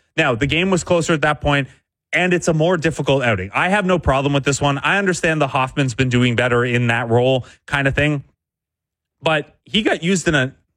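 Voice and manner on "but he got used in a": voice cracking, breaking. Answering a viewer's written comment when the voice suddenly cracks: voice cracking. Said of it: "voice crack".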